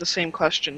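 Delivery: ordinary delivery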